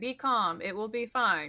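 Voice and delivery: faintly machine-like, slightly robotic delivery. Offering to calm a wounded ally with a counselor ability: slightly robot voice.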